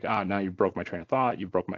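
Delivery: ordinary talk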